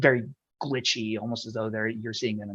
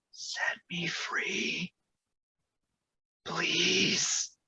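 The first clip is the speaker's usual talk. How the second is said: breathy whisper, close into the ear; 7 semitones higher, 4 dB quieter than usual. Narrating a scene, voicing a voice that speaks into Release's ear, in a whisper. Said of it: "a voice kind of whispered into your ear".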